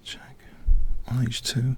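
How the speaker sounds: soft, hushed whisper. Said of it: "why I'm whispering".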